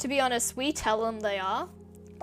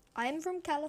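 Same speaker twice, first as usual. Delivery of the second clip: bad, fake American accent; 6 semitones higher, 4 dB quieter than usual. Imitating Americans visiting Australia: bad American accent. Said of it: "that's not it".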